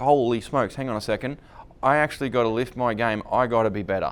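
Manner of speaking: plain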